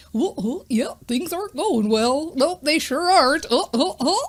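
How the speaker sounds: silly, goofy cartoon-dog character voice. Showing how they replay a worried thought in a cartoon voice: Goofy voice. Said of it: "I try to turn it into like a Goofy voice".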